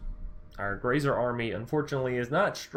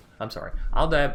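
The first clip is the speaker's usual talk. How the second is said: ordinary delivery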